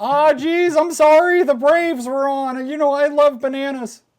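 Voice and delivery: very high, squeaky, loud character voice. Voicing a Patreon plug in place of Landon: Morty voice. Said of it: "That's Morty Lando".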